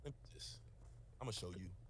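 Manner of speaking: whispered quietly to oneself.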